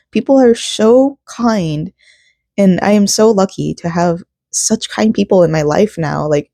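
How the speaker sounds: voice catching, choked-up, teary, close to crying. Speaker tells viewers how kind the people in their life are, choking up, near tears. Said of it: "I'm gonna cry. I can't stop".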